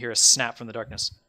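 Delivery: ordinary talk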